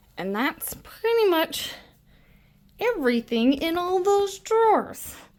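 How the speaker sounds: very high, winded, out-of-breath voice. Walking through what's in the craft drawers: out of breath. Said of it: "I am winded".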